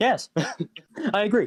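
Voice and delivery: dazed, bewildered reply. A blindsided character answers a tech priest he could not understand, dazed. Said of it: "dazed and very much blindsided".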